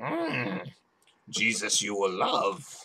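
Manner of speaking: very slow character voice, each word drawn out, swooping. Joking that Pat Robertson talks like Yoda: Yoda voice. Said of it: "except Yoda was smart".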